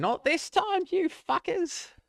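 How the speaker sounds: put-on very high, shrill old woman's voice yelling out. Narrator voicing an old woman shouting from upstairs: shouting old woman voice. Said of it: "the old woman's voice shouting out".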